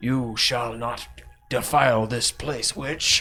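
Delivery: slow, echoing, reverberating ghostly voice. Game master voicing a figure rising from a sarcophagus toward a witch, in an echoing voice. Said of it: "somehow the echoing uh, voice you can hear".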